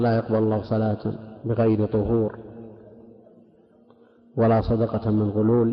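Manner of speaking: ordinary talk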